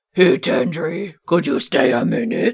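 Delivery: put-on fantasy orc character voice. Voicing a character in the game, giving her an orc voice. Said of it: "Because that's how an orc would talk".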